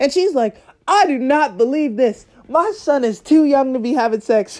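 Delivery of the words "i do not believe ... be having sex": furious, outraged rant, going off. Quoting a mother on the phone while the speaker sits beside her; retelling an angry rant. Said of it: "going off on the phone".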